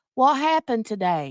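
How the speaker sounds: loud, played-up, put-on Southern accent. Reading a funny joke aloud in a Southern accent. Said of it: "let me say it in my best Southern accent".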